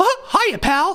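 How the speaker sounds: very high, cartoonish mouse voice. Mocking how the president supposedly talks: Mickey Mouse voice. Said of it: "Like he's Mickey Mouse".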